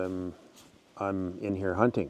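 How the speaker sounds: usual speaking voice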